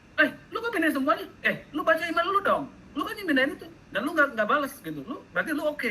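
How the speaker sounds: shrill, rapid, angry scolding tone.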